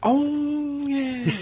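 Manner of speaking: mock, high, drawn-out sound of dawning realization.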